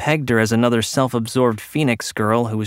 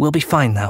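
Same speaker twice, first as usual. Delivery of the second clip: hurried, quick, higher pitch; 3 semitones higher than usual. A woman reassures a concerned companion, said quickly. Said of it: "she said quickly".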